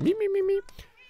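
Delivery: very high, cracking "mi-mi" voice test.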